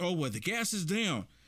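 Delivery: normal talking voice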